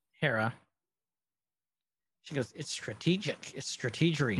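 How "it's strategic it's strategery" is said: normal talking voice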